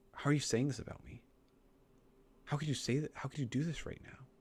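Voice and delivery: put-on manipulative tone. Speaker acts out how a woman sounds in a conversation, mocking a manipulative tone. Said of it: "it sounds very manipulative right now".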